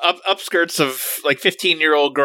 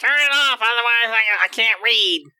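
high, slow, drawn-out nagging voice; 9 semitones higher than usual. Imitating the other speaker coming to bed: impression of them nagging. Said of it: "that's a very good impression of me".

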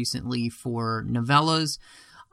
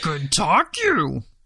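put-on small alien voice, higher pitch; 4 semitones higher, 3 dB louder than usual. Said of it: "Now I just sound like Yoda".

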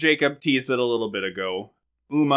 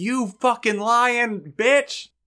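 acted, very high, slow, drawn-out enraged outburst; 10 semitones higher than usual. Recapping a story, the speaker acts out Ben's reaction, retelling Ben's angry outburst. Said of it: "he gets really mad".

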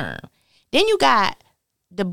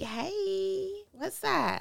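very high, soft, hushed flirty voice; 11 semitones higher, 13 dB quieter than usual. Retelling greeting a good-looking customer at the drive-through: imitating flirty greeting. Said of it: "if you saw somebody who was fine".

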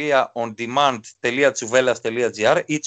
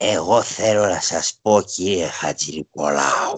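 put-on much lower, slow, tired aged voice. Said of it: "Ένας άνθρωπος κουρασμένος με τα χρόνια του".

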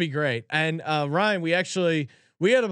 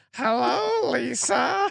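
high, creaky, raspy parrot voice; 7 semitones higher than usual. Retelling a coach's impression of a parrot: Mike Leach impersonating a parrot. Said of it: "Mike Leach im-, impersonating the parrot".

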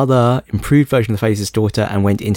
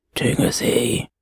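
put-on old man voice, quieter; 5 dB quieter than usual. A guest says his name again on request, in an old man voice. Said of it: "And now he'll say it in some old man voice".

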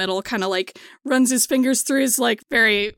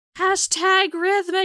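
shouting out in a character voice, higher pitch; 10 semitones higher than usual. Voicing a character calling to the people around her: yelling to the crowd. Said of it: "she kinda yells to the people around her".

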